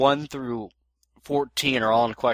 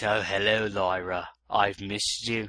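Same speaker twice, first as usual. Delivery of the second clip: put-on British accent, much slower pace; 5 semitones lower, 5 dB quieter than usual. Showing how the Earth version of the character sounds, British Discord voice. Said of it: "The one on Earth sounds like this".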